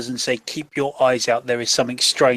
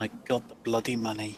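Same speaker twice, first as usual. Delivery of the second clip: very quiet aside, muttered under the breath; 3 semitones lower, 14 dB quieter than usual. In character, after promising to tend the prince's wounds: muttering under breath. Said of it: "I shall mutter under my breath".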